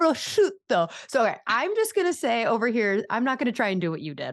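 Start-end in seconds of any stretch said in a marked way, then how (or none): 0.0-0.9 high put-on Italian accent on prosciutto. Imitating a woman with an american accent reaching an italian word, put-on italian accent. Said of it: "anytime she gets to like an Italian word, she'll be like".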